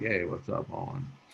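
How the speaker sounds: whispered, barely-there, low-energy, laid-back easygoing hush. Host shows how he'd greet a friend on the couch, low-energy second-gear voice. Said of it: "I live my life in second gear".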